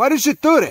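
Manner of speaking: super loud, incensed, furious outburst pitched high. Demonstrating how a question sounds when mad: super loud and incensed. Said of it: "when I say it like that, super loud, you know, just incensed".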